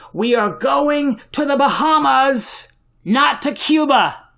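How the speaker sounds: high, bellowed, bellowing captain's voice. Recalling the ship's captain giving the crew instructions: retelling a captain's bellow. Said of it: "And then he bellowed".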